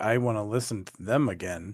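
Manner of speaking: dry, mock, heavily sarcastic tone. Retelling own past words about a band: imitating own past words sarcastically. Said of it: "that wasn't sarcastic at all".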